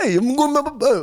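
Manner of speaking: very high, squeaky New York accent. Showing how people from new york talk; new york accent. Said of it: "everyone from New York talk like that".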